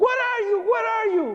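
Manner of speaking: play-acted, very high-pitched screaming. Recalling Mom answering the phone after an accident in the building, retelling her screaming. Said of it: "she's screaming".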